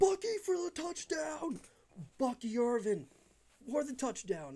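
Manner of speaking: high, swooping excited shout held in check. Calling a touchdown with neighbors right nearby: high-pitched held-back yell. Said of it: "I'm sorry I get high pitched with my voice".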